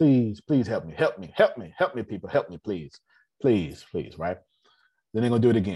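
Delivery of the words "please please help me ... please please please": put-on sobbing, repeating over and over. Acting out calling the card company to beg for money: mock crying plea. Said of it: "I'm gonna call them and cry".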